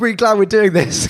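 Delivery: put-on fast, high octane talk. Acting out the start of a date: imitating someone speaking fast and hyped. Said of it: "on the speaking fast thing".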